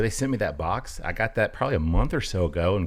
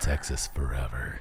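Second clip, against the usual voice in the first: sultry announcer voice, much lower and quieter; 9 semitones lower, 6 dB quieter than usual. Showing how the tagline on the box should be said, sultry radio voice. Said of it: "you got to say it like all sultry".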